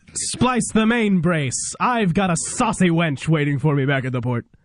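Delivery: put-on British accent in a commanding army general voice. Speaker auditions lines for a pirate part: british general voice. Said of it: "You sounded like a like a good British general".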